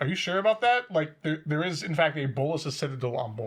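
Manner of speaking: ordinary talk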